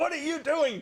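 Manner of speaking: high-pitched yell. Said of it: "she started yelling".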